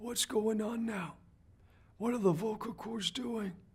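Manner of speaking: airy, breathy voice, very high and soft. Showing how the voice sounds when talking like this: breathy voice.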